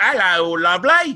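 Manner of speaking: put-on bad British accent. Arguing nobody would cast him as a British guy, the speaker does a bad British accent. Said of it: "You wouldn't hire me to play a British guy".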